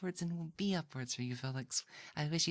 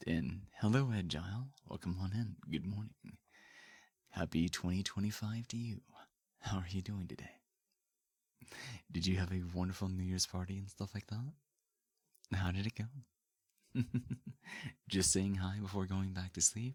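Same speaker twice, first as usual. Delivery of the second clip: deep, lower daddy voice; 10 semitones lower than usual. Greeting a viewer after switching voices on stream: low daddy voice. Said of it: "Bring out the daddy voice".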